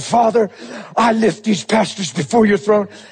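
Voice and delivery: earnest prayer voice. Retelling the moment you stood up to pray, in a put-on intercession prayer voice. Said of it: "I put on my intercession voice too".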